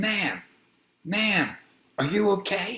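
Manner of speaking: put-on, very high-pitched screaming call. Driver lowers the window to call to a woman in the mist, retelling own scream. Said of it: "I put my window down and I'm screaming".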